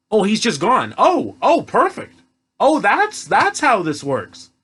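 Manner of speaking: swooping, gushing sarcasm dressed as admiration. Mocking a movie plot hole about a vanished body: sarcastic. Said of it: "I'm being sarcastic".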